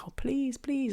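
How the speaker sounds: put-on high, whiny, pleading, annoying kid-sister voice. Retelling begging a friend for a smoke: imitating own pleading like annoying kid sister. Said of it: "I was like that annoying kid sister".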